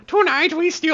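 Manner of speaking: fake, laid-on Swedish accent. Warming up before repeating a catchphrase: put-on swedish accent. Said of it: "Let me do it in Swedish accent".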